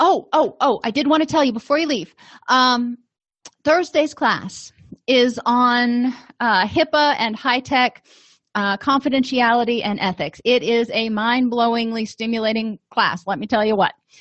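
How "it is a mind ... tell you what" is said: ordinary talk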